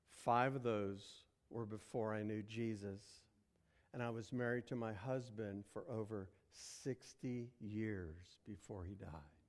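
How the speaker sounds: very hushed, very low and soft voice. Retelling what a woman said as the speaker looked at the license, very quiet voice. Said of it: "she said in a very quiet voice".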